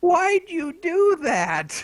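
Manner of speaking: very high, very drawn-out, slow swooping yell. Retelling a niece watching a puppet show: imitating niece yelling at screen. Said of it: "yelling at the screen".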